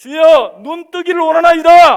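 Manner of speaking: crying out, high and loud.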